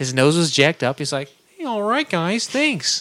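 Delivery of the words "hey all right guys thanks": put-on laid-back drawl, pitched higher. Retelling what a wedding crasher said, in an Owen Wilson impression. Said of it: "This is my Owen Wilson impression".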